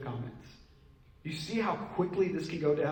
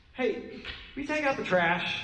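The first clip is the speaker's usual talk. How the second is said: off-putting, demanding, pitched-up tone; 7 semitones higher than usual. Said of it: "You say it like that, I'm not really gonna want to".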